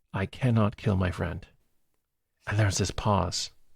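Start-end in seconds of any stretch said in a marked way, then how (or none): 0.1-1.4 wonderfully mild, gentle delivery. Retelling a movie scene's line, gentle Ben Kingsley voice. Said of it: "Ben Kingsley in this wonderful, gentle voice".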